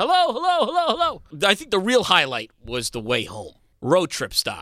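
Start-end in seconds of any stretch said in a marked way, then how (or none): 0.0-1.2 high, carrying yell, repeated over and over. Telling of walking around with no human or car in sight, retelling his yelling. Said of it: "I was yelling".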